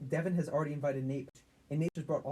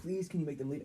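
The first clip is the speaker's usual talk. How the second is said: put-on tearful, crying, begging plea. Retelling how the crying house owner begged: imitating someone crying. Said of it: "she was fucking crying".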